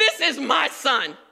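put-on excited voice. Retelling God announcing his Son at the baptism: God sounding so excited. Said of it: "God is so excited. He's like".

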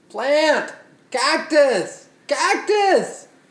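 very high, screamed calling out. Imagining Louis with his plants: imitating Louis screaming.

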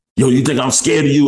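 high, defiant, confrontational yell. Retelling a confrontation in a bank with the speaker's son; retelling a yell. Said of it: "then he started yelling at him".

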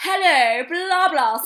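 very high, very loud, plummy posh English voice. Describing a man who was painful to listen to, imitating a posh accent. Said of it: "he was so posh".

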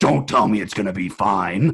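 loud space villain crossed with wrestling promo voice. Retelling Katie's hungry reply to reassurance, imitating Katie as Vader-Macho Man mix. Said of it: "sounded like a mix between Darth Vader and Macho Man".

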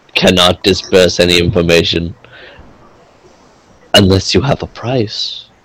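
guarded, confidential, secretive stage-whisper tone. Voicing a collector who buys and sells, answering a player in a role-playing game, hushed voice. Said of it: "he says underneath a hushed voice".

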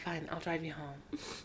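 very soft, grudging tone, barely above a breath. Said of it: "but he's like".

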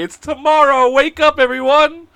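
mock top-of-the-lungs yell, very high and drawn out. Speaker retells shouting from a block away to wake everyone: retelling own shouting. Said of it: "shouting at the top of my lungs".

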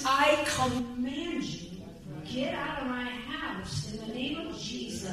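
quiet, scolding tone.

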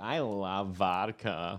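put-on caricatured girly party-girl voice. Joking about drinks, the speaker acts out how girls talk: impression of a girl. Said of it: "that's my impression of a girl".

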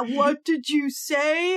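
slow, menacing, drawn-out delivery. Retelling a movie scene, Santa looming over the boy: imitating an intimidating Santa. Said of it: "looming over him and intimidating him and says".

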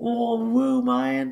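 put-on Australian accent, very high, freaked-out amazement. Retelling a bootleg fan's reaction: imitating a fan, Australian accent. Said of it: "Only with an Australian accent".

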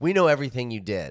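normal talking voice

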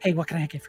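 nervous, flustered, hurried voice. Voicing a waiter greeting customers: nervous busy waiter. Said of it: "they're very nervous, like, busy-looking waiters say".

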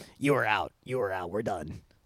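quiet, low, smoker-like voice. A fighter retells the referee stopping the fight, Keith Peterson smoker's voice. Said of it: "because he has like the smoker's voice".

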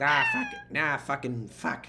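put-on swooping Boston accent, "fuck" said as "fack". Asked to do an impression of their captain from Boston: Boston accent impression. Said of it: "Do your your impression of your captain who is from Boston".

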